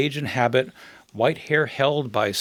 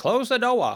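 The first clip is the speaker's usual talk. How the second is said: put-on Down East Yankee accent in a raised pitch; 9 semitones higher than usual. Imitating a grandmother who spoke English like a Down East Yankee: Down East Yankee accent. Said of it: "she would speak like a, like a Down East Yankee".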